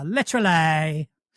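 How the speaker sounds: Essex accent, hard stress on -ly of literally. Teaching an Essex accent: Essex accent leaning on -ly. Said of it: "for an Essex accent, all you have to do is lean on the words that end in ly".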